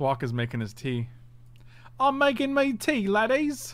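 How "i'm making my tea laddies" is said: put-on insulting, very high, slow, drawn-out British accent. Voicing Thwok as he makes his tea, in a mock British accent. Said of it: "Was that an insulting British voice?".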